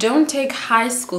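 emphatic "DON'T" stretched out slow and high. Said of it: "Did you hear what I said?".

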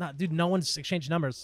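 plain

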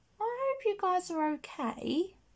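condescending tone. Blending eye makeup on camera while talking to viewers, in a condescending, patronising tone. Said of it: "It sounds so condescending and patronising".

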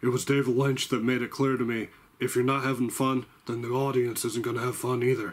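normal talking voice

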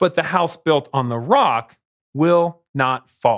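plain

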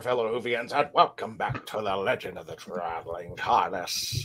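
put-on pirate accent, drifting about. Host welcomes fellow WHOvians on Talk Like a Pirate Day in a put-on pirate accent. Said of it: "I don't even know what accent I'm doing anymore".

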